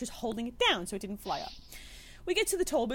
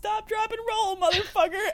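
shrill, very high, loud screamed shout; 9 semitones higher, 7 dB louder than usual. Retelling how a guy leaned out his car at the burning man: imitating a man screaming. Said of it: "leans out his car and screams".

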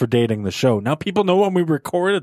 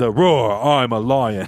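put-on very British accent, lower; 4 semitones lower than usual. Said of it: "in a very British voice say".

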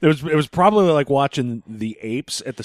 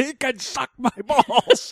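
play-acted, high-pitched screamed outburst; 11 semitones higher than usual. Quoting back the listener who was on speaker in the car, retelling a scream. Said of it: "And you're screaming".

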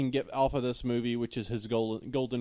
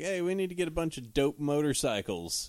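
normal talking voice

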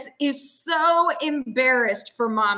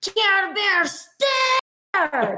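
loud high-pitched shouting; 7 semitones higher than usual. Casting a spell in character at an ogre: shouting very loudly. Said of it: "shouts out very loudly".

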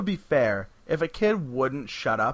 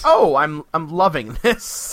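put-on excited voice, louder; 8 dB louder than usual. Retelling the Doctor's reaction to being called on stage: imitating the Doctor, excited. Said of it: "The Doctor is so excited".

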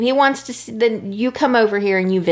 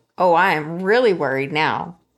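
put-on shocked voice, lower; 4 semitones lower than usual. Retelling the story, the speaker acts out Brooke's reaction, imitating Brooke, shocked. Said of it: "Brooke is shocked and she's like".

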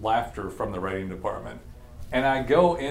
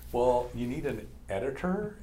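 put-on millennial valley girl type voice; 4 dB quieter than usual. Retelling what a girl came up and said to the speaker, in a valley girl voice. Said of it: "like millennial / valley girl type".

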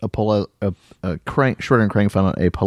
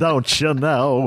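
put-on silly, goofy, high-pitched old comedian voice; 6 semitones higher than usual. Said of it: "He's all goofy and talks like this".

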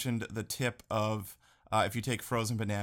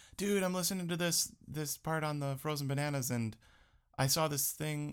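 put-on girly voice, pitched up; 5 semitones higher than usual. Reading out a listener's comment from Elizabeth: girl impression of Elizabeth. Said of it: "whenever I do a girl impression, it's like that".

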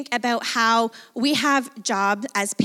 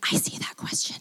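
hushed, soft, breathy whispered aside. Retelling walking downtown, holding a child's hand: retelling a whisper. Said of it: "I whispered to him".

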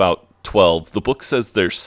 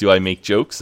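usual speaking voice

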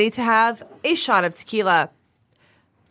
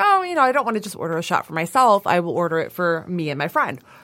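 ordinary talk, nothing marked

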